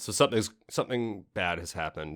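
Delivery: ordinary delivery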